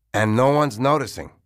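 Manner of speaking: plain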